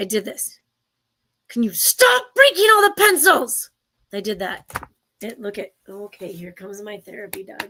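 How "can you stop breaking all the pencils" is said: very high, loud shout. Retelling what was yelled at eighth graders: imitating own yell. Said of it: "I'm gonna yell, so cover your ears".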